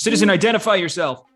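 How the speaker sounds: booming, loud, high voice blaring over a speaker. Voicing a speaker that orders a citizen to identify themselves, booming voice over a speaker. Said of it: "a voice that's kind of booming out of a speaker".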